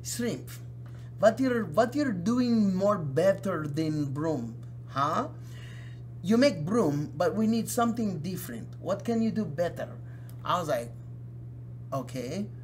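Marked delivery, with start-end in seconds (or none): 0.0-9.9 put-on Israeli-accented voice. Retelling what a film company owner told them as a kid, in an Israeli accent. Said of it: "in his Israeli voice".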